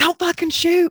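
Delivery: shrill, very high yelling. Speaker recounts people in the shower hearing a shotgun during a prank, retelling a yell. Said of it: "they started yelling".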